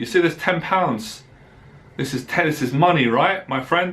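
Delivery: ordinary talk, nothing marked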